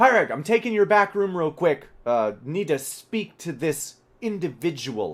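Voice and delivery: loud, high yelling across a room. Voicing a character calling to the barkeep: NPC yelling across the bar. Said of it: "he yells out".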